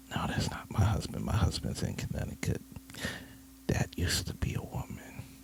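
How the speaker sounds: put-on whispering. Retelling what a guest at a baby shower said: imitating someone whispering.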